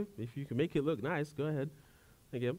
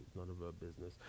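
put-on muttering under the breath, lower and quieter; 10 semitones lower, 18 dB quieter than usual. Retelling a mom's remark about a haircut: imitating a mutter under the breath. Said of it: "she had a mutter under her breath".

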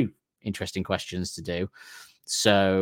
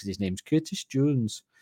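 Liverpudlian Scouse accent; 4 semitones higher, 3 dB quieter than usual. Explaining why they say a man's name a certain way: Liverpool accent. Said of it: "That was Liverpoodling".

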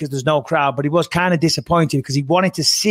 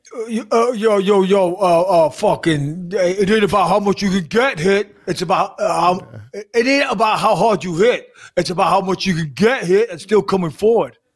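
bad, fumbling, stumbling put-on tough-guy voice; 4 semitones higher than usual. Quoting a speech from Rocky Five: worst Rocky impression. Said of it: "the worst Rocky impression I've ever heard".

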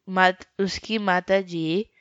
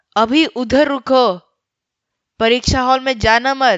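loud call, much higher pitch; 5 semitones higher, 6 dB louder than usual. A teacher calls out to a student heading to the exam hall, speaking loudly. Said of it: "जोर से बोलते हुए सुनो".

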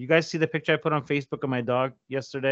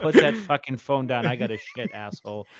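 usual speaking voice

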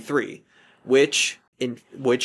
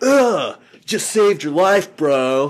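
full surfer-dude voice, loud, slow, drawn out; 4 semitones higher, 7 dB louder than usual. Retelling a film scene where he collects hair samples, Keanu Reeves surfer voice. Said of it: "I'm gonna talk full surfer".

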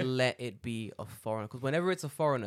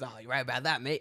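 put-on grumpy, salty old man voice. Retelling what an old man said on the train: imitating a salty old man. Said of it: "this salty old man just being like".

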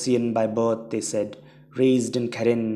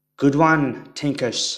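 loud, booming, big resounding voice; 3 semitones higher, 5 dB louder than usual. Narrator voicing a man calling out to Tinkers in battle, booming. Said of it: "he boomed".

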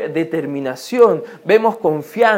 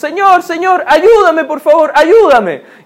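loud, high-pitched shouting, crying out; 8 semitones higher, 6 dB louder than usual. Acting out the blind beggar calling to Jesus: blind beggar shouting for help. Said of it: "el cieguito mendigo que ve pasar a Jesús y está gritando".

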